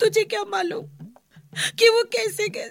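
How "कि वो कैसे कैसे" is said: high-pitched crying, tearful. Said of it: "रो मत".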